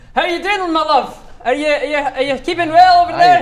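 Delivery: put-on flawless Scottish accent, very loud and high-pitched. Performing a character who greets someone, in a perfect Scottish accent. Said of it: "perfect Scottish accent. He says flawlessly".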